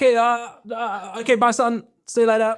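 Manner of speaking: acted-out panic, very high, flustered and stammering. Retelling how a dad reacted after a tire burst: imitating a panicking dad. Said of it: "he's, like, panicking".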